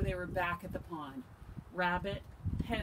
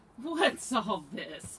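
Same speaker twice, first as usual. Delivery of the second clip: amused, chuckling; 2 semitones higher than usual. Narrator reading Rabbit's line after Hedgehog cries about the pond monster, chuckling. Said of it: "chuckled Rabbit".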